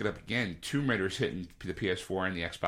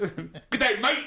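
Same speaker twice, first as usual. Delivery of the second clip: high-pitched, loud, put-on British accent; 12 semitones higher, 6 dB louder than usual. Joking about liking British accents: put-on British accent. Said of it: "A little British accent really kinda gets me".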